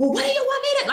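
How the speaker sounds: put-on yelling voice. Retelling a fight about being late, imitating her yelling. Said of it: "just start yelling at me about it".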